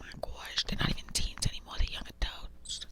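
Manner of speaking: fast, rushed, hushed whisper. Talking about returning to making videos, the speaker is whispering. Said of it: "I'm whispering".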